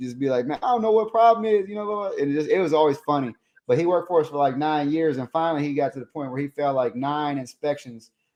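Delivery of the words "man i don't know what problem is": heavy put-on Southern accent, pitched up. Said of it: "real strong Southern accent".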